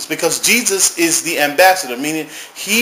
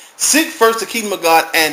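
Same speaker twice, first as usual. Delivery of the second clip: ordinary delivery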